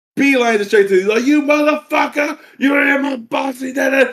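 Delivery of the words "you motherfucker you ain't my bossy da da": put-on angry yell, higher pitch. Retelling the grandfather confronting the uncle: imitating an angry yell. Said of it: "getting pissed off".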